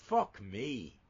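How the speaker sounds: put-on Southie Boston accent. Quoting a Boston DEA agent's catchphrase: Southie Boston accent. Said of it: "in a good Southie accent".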